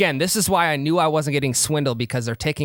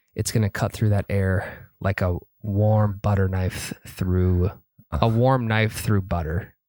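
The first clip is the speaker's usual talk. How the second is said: lowered, calm, soothing tone. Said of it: "did he lower his voice?".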